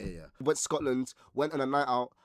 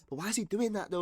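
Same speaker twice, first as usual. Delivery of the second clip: put-on high-pitched, frustrated, venting shout; 9 semitones higher than usual. Retelling a stranger venting to her friend, imitating her shouting. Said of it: "She's just like shouting at her friend".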